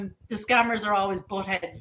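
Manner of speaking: usual speaking voice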